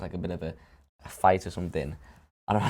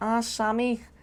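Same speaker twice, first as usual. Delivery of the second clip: put-on very high-pitched child voice with Scouse accent. Acting out a play role as a kid, in a Scouse accent. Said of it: "I've gotta keep the Scouse accent".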